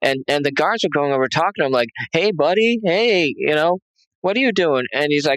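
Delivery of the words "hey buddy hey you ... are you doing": weird, pitched-up mocking tone. Retelling guards talking to an inmate in the next cell, imitating guards' mocking tone. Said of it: "he was talking like he was a five year old girl".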